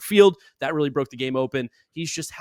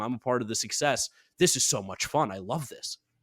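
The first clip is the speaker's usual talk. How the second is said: usual speaking voice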